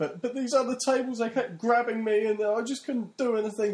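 very high, loud, jokey, sarcastic slapstick exasperation. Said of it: "in almost sarcastic and a jokey sort of way".

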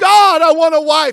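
very loud, very high, drawn-out scream. Retelling a man praying before church, imitating someone screaming. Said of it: "He's screaming".

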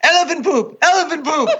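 put-on very high, urgent, repeated shouting. Retelling coming over a crest while Fabrizia was yelling: imitating Fabrizia yelling. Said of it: "Fabrizia was yelling".

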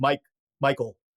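deep, dropped, flat, emotionless manly tough-guy voice. Retelling giving one's name at a ticket counter: imitating own deep voice. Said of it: "I go to this deep place".

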